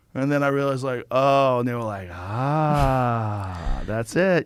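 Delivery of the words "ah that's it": put-on sarcastic tone. Retelling what the jesters said back: imitating a sarcastic tone. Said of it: "They're kinda sarcastic".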